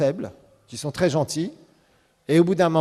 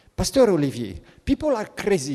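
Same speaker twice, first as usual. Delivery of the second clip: amusing put-on Indian English accent; 9 semitones higher, 6 dB quieter than usual. Recalling a pastor in Paris who told him this, imitating an Indian accent. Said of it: "Il parlait avec un accent indien".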